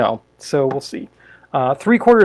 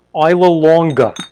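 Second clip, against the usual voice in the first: put-on New York accent; 4 dB louder than usual. Answering a request to say the drink's name: new york accent. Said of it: "Can you say that with a New York accent?".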